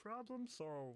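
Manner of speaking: very high-pitched cartoon frog puppet voice. Repeat a phrase for the others, who then guess whose voice it is, in a Kermit voice.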